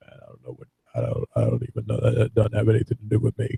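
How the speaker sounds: gravelly, creaky, rough speaking voice. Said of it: "His speaking voice is the most gravelly thing".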